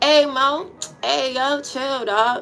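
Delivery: put-on DC accent. Describing how people in Southeast DC talk, imitating them: thick Southeast DC accent. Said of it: "that's how they talk in uh southern D C".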